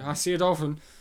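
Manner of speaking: play-acted, thoroughly irritated, annoyed tone. Retelling a man putting pizza on the truck, imitating someone annoyed. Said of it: "He just sounds so annoyed. Like".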